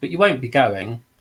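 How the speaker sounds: usual speaking voice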